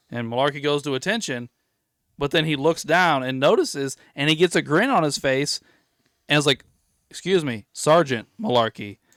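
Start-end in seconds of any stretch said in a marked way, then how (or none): 7.1-8.9 put-on proud, pleased voice swelling with pride. Retelling a sergeant's words to a private: imitating a proud tone. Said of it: "almost like there's pride in his voice".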